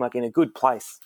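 plain

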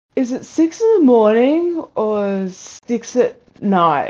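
very slow, puzzled, drawn-out confused wondering. Retelling a housemate's question on walking out: imitating a confused housemate. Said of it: "just be scratching his head and going".

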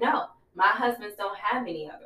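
normal talking voice

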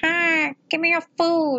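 very high, drawn-out, demanding cat yell. Voicing the old cat who yells for food: imitating cat yelling for food. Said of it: "yells at you for your food".

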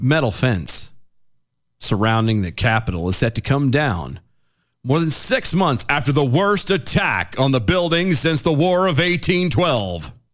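solemn, weighty, grave tone, very slow. Rereading a news line again to establish its gravity: mock-grave delivery. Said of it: "Did I help establish the gravity".

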